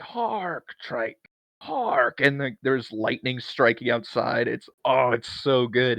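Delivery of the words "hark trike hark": big theatrical shouted cry, pitched up. Describing a man's performance, the speaker acts out his shouted line: retelling a yell. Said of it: "And he yells".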